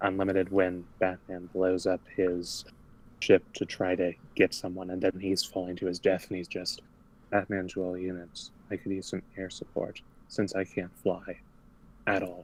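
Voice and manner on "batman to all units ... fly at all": completely deadpan, dry, expressionless understatement. Recalling a Justice League Unlimited scene, quoting Batman falling to his death, deadpan. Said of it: "All just completely deadpan".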